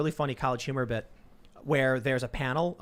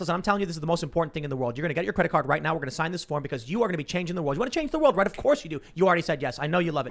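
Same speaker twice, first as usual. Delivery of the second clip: ultra fast, rapid-fire, rattled-off delivery; 2 semitones higher than usual. A former fundraiser shows how his pitch to people went, ultra fast fundraising pitch. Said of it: "But then there's also the ultra fast".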